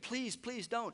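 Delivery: high, screamed, mock begging plea. Retelling a story in which a hostage is about to be killed: imitating someone begging and screaming. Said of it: "And he's begging and he's screaming".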